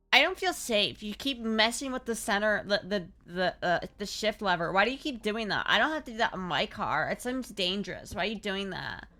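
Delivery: ordinary talk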